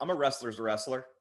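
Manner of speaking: plain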